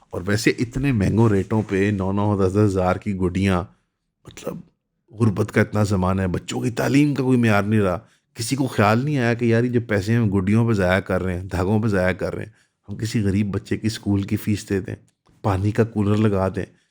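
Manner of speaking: ordinary talk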